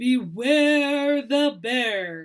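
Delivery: loud, growly booming bear voice, "beware" stretched out. A narrator reads a bear arriving as penguins sleep, in a great growly booming voice. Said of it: "a great growly voice boomed out".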